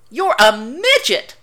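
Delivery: high, triumphant, gloating crow. Sam teases Dean, throwing his arms out wildly; crowing. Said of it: "Sam crowed".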